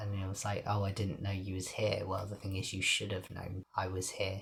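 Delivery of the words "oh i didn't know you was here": ordinary talk, nothing marked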